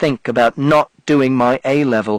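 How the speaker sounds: ordinary delivery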